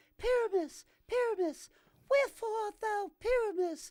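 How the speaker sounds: very high, loud, projected put-on heroine voice. Recalling playing a Shakespeare role on stage, in a high-pitched Thisbe voice. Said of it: "I had to put on a high pitched voice".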